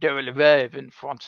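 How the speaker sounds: put-on French accent. Talking about a show they have many opinions on, saying it in a French accent. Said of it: "In a French accent".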